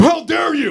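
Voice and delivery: high-pitched indignant, outraged outburst. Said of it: "it'd be weird if I was like".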